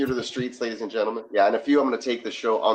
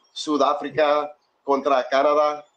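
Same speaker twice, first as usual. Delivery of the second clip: Spanish-accented pronunciation, pitched up; 6 semitones higher, 4 dB louder than usual. Announcing a knockout match and saying the teams in Spanish: Spanish accent. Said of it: "I love the accent".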